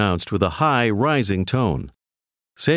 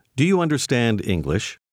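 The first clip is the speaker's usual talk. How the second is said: ordinary talk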